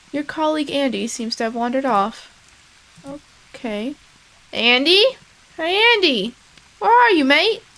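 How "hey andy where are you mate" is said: rough, pitched-up attempted Australian accent. Calling for a colleague who wandered off, in an attempted Australian accent. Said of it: "Do we have an accent?".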